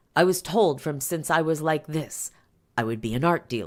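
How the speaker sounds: ordinary delivery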